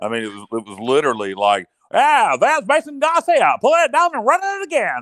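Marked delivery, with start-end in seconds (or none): 1.9-5.0 put-on old-time announcer voice, much higher pitch. Mocking a team's outdated offense, the speaker uses an old-time announcer voice. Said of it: "Nice voice".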